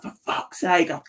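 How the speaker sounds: mock angry shouting. Recounting how a fuming man reacted, retelling his angry shout. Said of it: "and he's shouting".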